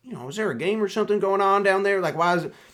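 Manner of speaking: halfway Kentucky accent attempt. Retelling what a big fella with a Kentucky license plate asked outside, in an attempted Kentucky accent. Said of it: "I can't do the accent".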